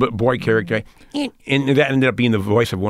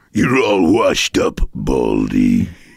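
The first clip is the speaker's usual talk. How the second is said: very deep, swooping goon voice; 10 semitones lower, 4 dB louder than usual. Voice actor recalls his Space Jam role, doing the Bang the Monstar voice. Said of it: "his voice was like".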